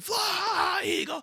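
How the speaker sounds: very high, all-out scream at the top of lungs. Retelling running into the street after the win, the speaker acts out screaming. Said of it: "just screaming".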